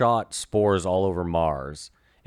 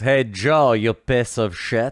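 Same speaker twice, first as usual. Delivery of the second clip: put-on drunk Russian voice, higher and louder; 3 semitones higher, 5 dB louder than usual. Joking about a drunk Russian Lex: imitating drunk Russian Lex. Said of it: "Imagine drunk Russian Lex".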